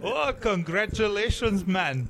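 light put-on Jamaican accent. Acting out the congratulations the other speaker should have given, in mock Jamaican accent. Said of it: "Is that like a Jamaican accent".

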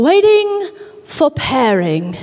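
clumsy, bad put-on British accent. Retelling the voice that comes through a car's speakers, in a terrible british accent. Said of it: "I have a terrible British accent".

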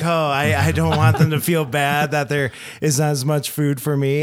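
ordinary talk

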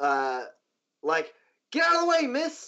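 very slow, swooping, drawn-out shout, rising. A narrator voices a woman warning someone to get out of the way, shouting. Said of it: "she kind of shouts, like".

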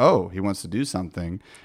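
normal talking voice

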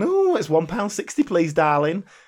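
silly, camp delivery. Explaining which joke gets the laugh, quoting the barman in a silly camp voice. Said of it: "he does a silly camp voice".

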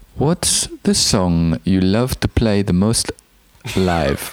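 attempted put-on German accent. Reading out a question while playing its sender: attempted german accent. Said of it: "I'll try and do an accent. Germany".

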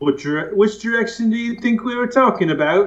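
bad British accent. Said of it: "That's a terrible accent".

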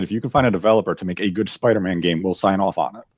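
normal talking voice

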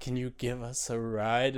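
weird put-on kid voice. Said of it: "talking like you just talked for those kids".

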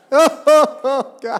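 loud, shrill, crying-like wailing, drawn out. Telling a crowd about a grandmother praying, mimic her: imitating grandma's loud crying-sounding prayer. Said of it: "prays in that loud voice that sounds like she's crying".

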